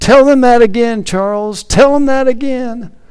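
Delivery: acted out very high voice, loud calling out. Speaker retells a grandfather calling out to his grandson, in a raised voice. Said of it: "he raised up his voice".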